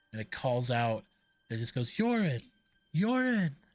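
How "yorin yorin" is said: put-on high little girl's voice, calling out. Game master voicing a small girl calling out a name: small girl's voice calling out. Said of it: "a small girl's uh, voice".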